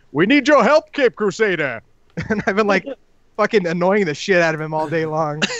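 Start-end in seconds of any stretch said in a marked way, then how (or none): 0.1-1.8 loud, high-pitched announcer voice. Speaker retelling teasing a toddler all day long; announcer voice. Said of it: "following him in like an announcer voice".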